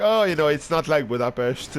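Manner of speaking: normal talking voice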